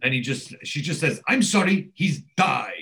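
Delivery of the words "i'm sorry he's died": blunt, curt, matter-of-fact German manner, drawn out. Retelling how a nurse broke news of a death: imitating a curt German manner. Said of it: "very, very German fashion".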